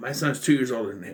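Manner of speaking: ordinary talk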